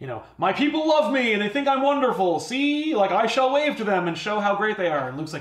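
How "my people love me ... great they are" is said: grand, lordly, pompous king voice, pitched up. Retelling a king on an elephant addressing his people: imitating a king lording over people. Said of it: "lording over them".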